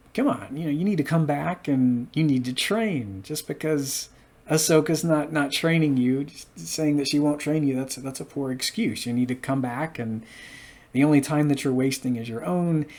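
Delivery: ordinary delivery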